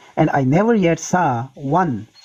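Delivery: plain reading voice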